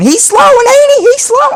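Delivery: screaming, very high-pitched and very loud. Recalling the commentary when Dale Jr. ran out of gas at Charlotte, imitating Waltrip screaming. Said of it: "Waltrip's just screaming".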